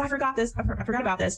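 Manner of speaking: ordinary talk, nothing marked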